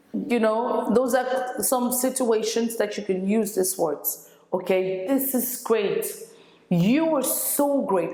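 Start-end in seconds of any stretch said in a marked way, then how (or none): 6.7-8.1 heavy emphasis landing on the word so. Teaching words for showing appreciation, with the stress on so. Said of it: "you see the stress on so".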